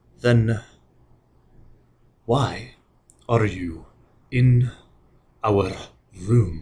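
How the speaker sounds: deep, grinding, guttural growl, broken up and halting. The narrator voices the spellcaster looking up at you: deep, grinding, guttural voice. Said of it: "with a deep, grinding, guttural voice says".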